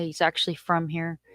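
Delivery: ordinary delivery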